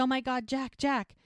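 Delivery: high, frantic calling out, held back. Speaker recounting a burning-house scene, retelling Mel's yell. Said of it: "So she yells and she goes".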